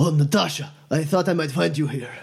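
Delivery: breathless, panting through the words. Retelling a scene, the speaker acts out a man running up, mock-panting. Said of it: "he seems out of breath, and he's, like, panting, and he goes".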